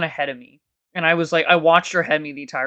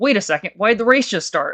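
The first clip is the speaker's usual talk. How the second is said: play-acted, high-pitched, startled mild panic; 5 semitones higher, 4 dB louder than usual. Retelling a race starting before the speaker was ready; imitating own panic. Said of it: "And I'm like kind of panicking".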